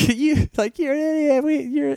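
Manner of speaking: imitated yelling. Recounting people yelling at the speaker revving the engine, retelling a yell. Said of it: "yelling at me".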